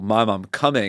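ordinary delivery

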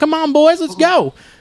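put-on high-pitched southern US accent. Retelling how a boy's mother cheered them on after football practice, southern accent. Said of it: "she did have a southern accent".

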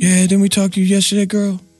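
creepy voice, high-pitched and fast. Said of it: "that's a creepy voice".

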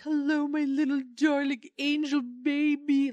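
high, over-the-top gushing, doting coo. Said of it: "she's really gross about how much".

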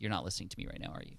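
very stern, breathy, hushed, quick, acted scolding tone. Recalling a woman catching the speaker not listening, imitating her stern voice. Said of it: "in a very stern voice".

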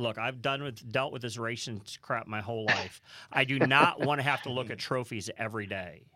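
ordinary talk, nothing marked

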